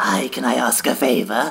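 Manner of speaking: gross, put-on, slow, creaky creepy voice. Reading out a gross Instagram message in a put-on creepy character voice. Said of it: "I'll do the voice because it's so gross".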